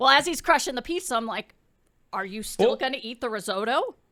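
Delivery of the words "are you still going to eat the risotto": put-on bass-heavy deep voice, lower pitch. Retelling asking someone at dinner about the risotto: imitating own bass-heavy voice. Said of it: "I may have had a little bass in my voice".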